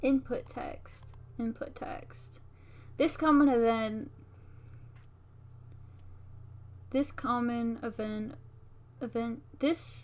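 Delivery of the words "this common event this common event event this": stammering, stuttering, repeating words. Explaining a game's common event, stuttering. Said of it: "I'm stuttering".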